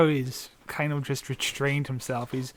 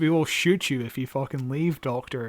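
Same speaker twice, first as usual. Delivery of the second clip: ordinary talk, nothing marked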